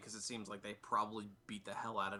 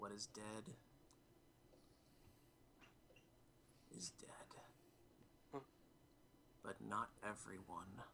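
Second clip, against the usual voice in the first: faint, hushed, very quiet, barely voiced whisper; 15 dB quieter than usual. Storyteller voices a character whispering a cryptic line to Ledger, whispering. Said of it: "and he whispers".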